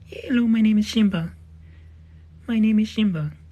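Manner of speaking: speaking as a dog. Speaking for the pet dog after asking it to say hello: voicing Simba the dog. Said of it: "You wanna say hello?".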